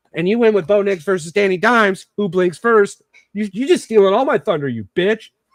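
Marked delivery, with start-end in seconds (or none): 3.3-5.3 sounding truly and really upset, sharp. Talking football bets with another speaker, sounding upset. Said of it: "you sound really upset".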